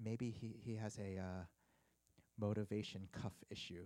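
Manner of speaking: perfect low, even deadpan voice.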